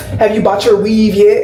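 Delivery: normal talking voice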